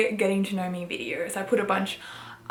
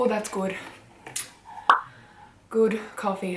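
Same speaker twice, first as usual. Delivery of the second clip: out of breath, winded, slower. Tasting coffee just after running upstairs, out of breath. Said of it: "I'm like out of breath from like running upstairs".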